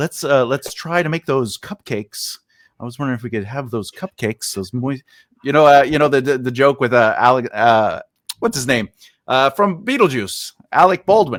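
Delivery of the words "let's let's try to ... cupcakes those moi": gentle, soothing public-radio host voice. Showing the voice used for the introduction: soothing NPR-host voice from Saturday Night Live. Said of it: "my voice from Saturday Night Live".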